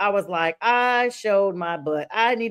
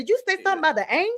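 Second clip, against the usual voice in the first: higher-pitched delivery with plenty of attitude; 8 semitones higher than usual. Retelling what the other person said to them later, mimicking his attitude. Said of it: "what he said with an attitude".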